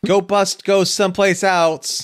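put-on very high-pitched little-kid toddler voice. Wrapping up talk of a great movie year, in a toddler voice. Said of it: "Why did you sound like a toddler just now?".

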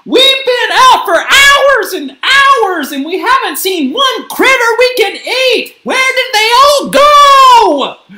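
shrill, very loud, high shout. Gabby, after walking for hours through the forest, cries out: shouting. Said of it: "Shouted Gabby".

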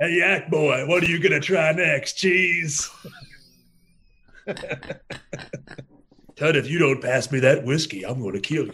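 mocking, teasing, taunting, jeering put-on voice. Show the others how you make fun of Cody, in the Jack Starrett voice. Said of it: "in the Jack Starrett voice".

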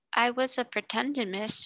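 slightly embarrassed, sheepish tone. Becky answers Sarah, who asked what she was doing; sheepish. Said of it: "she answered a little sheepishly".

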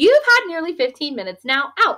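firm, decisive, high-pitched, no-arguing tone. Narrating a woman bustling over to a patient's visitors, speaking firmly. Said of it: "she said firmly".

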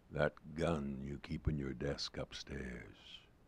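icy, cold, deep, hushed, intense, unwavering tone. A dead friend calling Frank on the phone, cold, deep and intense. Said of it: "It's [name]. Old [name]. ... Cold, deep and intense".

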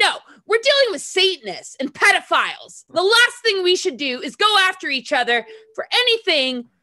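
very high, heated rant. Mid-rant in a conversation, just before apologizing: worked up. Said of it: "I need to calm down".

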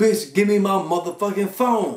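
shouting loudly. Retelling how a girl on the train yelled out: imitating someone yelling. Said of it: "So she yell out".

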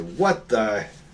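loud voice. A player voicing their character in a fantasy game, speaking in a loud voice. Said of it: "I make my voice real loud and say".

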